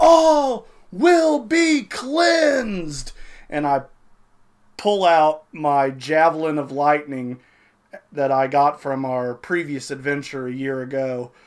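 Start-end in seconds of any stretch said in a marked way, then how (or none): 0.0-3.1 high-pitched, drawn-out battle cry yell. Charging out of the woods as a character in the game: in-character yell. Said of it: "I yell".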